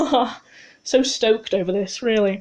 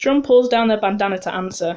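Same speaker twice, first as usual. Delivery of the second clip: usual speaking voice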